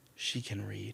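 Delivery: put-on whisper. Retelling what a Pashtun man said about his girls: imitating a whisper. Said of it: "whispered it to me".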